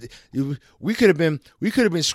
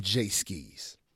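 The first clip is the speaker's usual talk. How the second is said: ordinary talk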